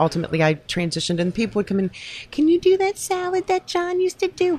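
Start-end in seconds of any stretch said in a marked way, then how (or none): 2.3-4.6 very high, teasing, mocking put-on voice. Retelling how customers asked for a dish: imitating a customer's voice. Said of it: "I'm making fun of somebody's voice".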